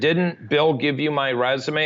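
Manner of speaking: normal talking voice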